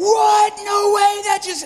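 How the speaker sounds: stunned, excited, amazed shout, very high and loud.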